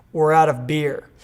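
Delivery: ordinary delivery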